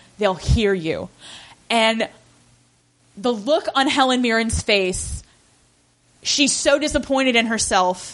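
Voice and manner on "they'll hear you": put-on icy cold delivery, lower pitch. Retelling a movie scene, quoting Mrs Croft: imitating Mrs Croft, cold as ice. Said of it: "cold as ice, not without compassion".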